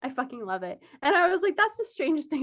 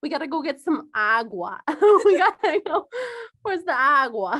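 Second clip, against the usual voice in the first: put-on loud, heavy New York accent; 2 semitones higher, 6 dB louder than usual. Speaker imitating a former high school Spanish teacher: heavy New York accent. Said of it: "she had a Bronx ac- accent".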